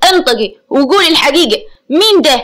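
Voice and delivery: spoken angrily, demanding tone. Amer, pulling a woman by her hair, speaks to her, angry. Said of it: "ثم تحدث بغضب".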